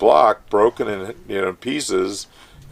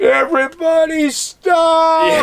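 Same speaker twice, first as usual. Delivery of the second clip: mock scream, higher and louder; 5 dB louder than usual. Retelling stopping the dig crew: retelling a scream. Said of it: "I just screamed".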